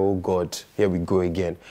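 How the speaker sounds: usual speaking voice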